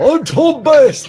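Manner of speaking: put-on London-accented voice. During a game, swapping places with tom bass, the player proclaims himself in a london accent. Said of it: "just randomly change between random different London accents".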